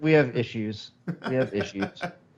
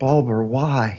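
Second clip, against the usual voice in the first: put-on sad puppy-dog whisper. Face to the window, speaker retells calling through it: sad puppy dog whisper. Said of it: "like in a sad puppy dog voice, whisper".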